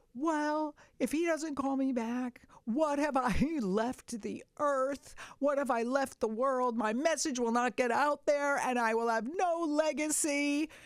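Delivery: acted, high, tearful, woeful crying with self-pity. Retelling own past venting about a producer, imitating own crying complaint. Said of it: "And I'm crying".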